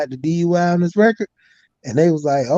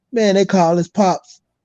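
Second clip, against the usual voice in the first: normal talking voice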